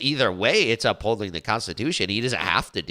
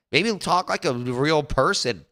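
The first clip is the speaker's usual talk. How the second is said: ordinary delivery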